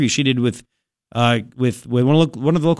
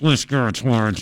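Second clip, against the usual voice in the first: put-on gritted-teeth speech, lower, slower; 4 semitones lower than usual. Acting out how a woman spoke about Garrett, in mock gritted-teeth speech. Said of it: "kind of gritting her teeth like".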